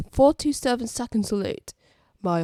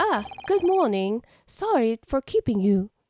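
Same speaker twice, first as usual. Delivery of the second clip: put-on British accent, kept consistent; 3 semitones higher than usual. A non-British speaker voices a character's dialogue: British accent. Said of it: "I'm just gonna default to a British accent".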